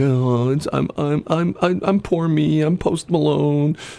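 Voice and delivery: high, whiny put-on voice. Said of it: "[name] sounds like a whiner".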